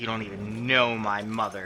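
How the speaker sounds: stern, firm tone full of conviction. Voicing a defeated fighter answering a taunt about his mother: stern, with conviction. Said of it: "he says it, like, with, like, conviction".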